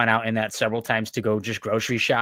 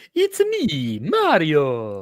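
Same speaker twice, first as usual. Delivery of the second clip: very slow, stretched character voice with swooping pitch; 5 semitones higher, 3 dB louder than usual. Recalling dressing up as Mario at a convention: Mario voice. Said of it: "I was doing the voice".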